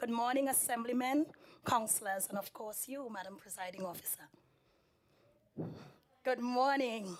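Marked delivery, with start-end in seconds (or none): 3.1-7.2 soft, half-whispered, failing voice. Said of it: "Please excuse my voice".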